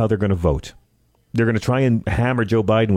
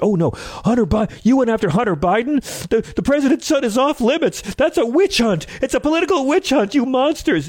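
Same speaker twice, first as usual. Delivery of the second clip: very high, gleeful, amused put-on indignation; 14 semitones higher than usual. Mocking the reaction his opponents expect from him, mock outrage. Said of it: "I'm completely amused by it".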